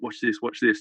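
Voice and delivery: ordinary delivery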